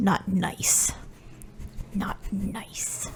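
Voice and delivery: breathy, growling grumble, whispered. In the game, the young plasmoid healer is still complaining, growly, airy plasmoid grumbling. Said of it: "And let me remind you how plasmoids speak. / The shiniest rock [name] has seen in their very few days of life. / It's really just air moving through this putty-like substance. Oh, yeah. This growling".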